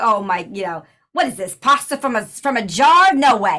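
put-on New York accent. Talking about accents, the speaker quotes the mom in the Mario movie: New York accent. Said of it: "I'm used to New York. Like in the Mario movie".

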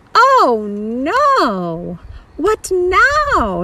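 slow sighing drawn-out no. Mr. little hears a tearing sound under his plane's wing, sighing. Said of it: "sighed Mr. Little".

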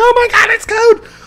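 high, loud squeal, freaking out like a fangirl.

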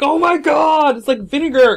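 very high, very loud, stunned, shocked outcry. Retelling a friend smelling a foot: imitating someone shocked. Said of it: "he was totally shocked".

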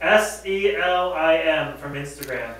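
loud, slow, spelled out. Repeating a giveaway winner's name after being asked, slower and louder. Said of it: "say that a little slower and louder".

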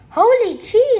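sudden high, loud shriek. Narrator reads the first-person hero reacting as his cousin throws up, screaming. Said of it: "I screamed".

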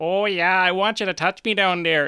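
put-on thick Wisconsin accent. Acting out somebody doing dirty talk, in a thick Wisconsinite accent. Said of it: "thick Wisconsinite accent".

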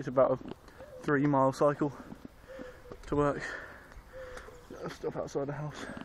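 out of breath, winded, halting, broken-up phrases. Just cycled home from work, stopping outside the house, out of breath. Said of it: "I'm still out of breath".

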